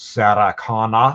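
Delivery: put-on heavy, thick Austrian accent. Imitating a very large man asking for someone: heavy Austrian accent. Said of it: "a very large man with a heavy Austrian accent asking".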